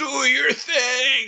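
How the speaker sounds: shrill, very high scream with "thing" drawn out. Calling to an ally while sliding toward a dragon: screaming. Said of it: "I'm screaming".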